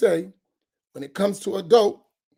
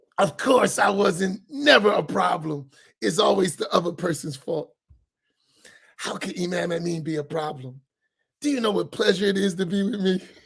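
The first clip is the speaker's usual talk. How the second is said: heavy sarcasm played as put-on innocence. Joking that it's never their own fault: put-on sarcastic tone. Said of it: "'Cause I'm being sarcastic".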